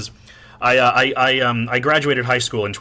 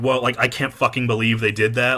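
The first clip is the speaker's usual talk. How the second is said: ordinary talk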